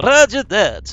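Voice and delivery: put-on failed Russian accent. A squad member answering the squad leader's order, in a bad russian accent. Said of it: "I can't do a Russian accent".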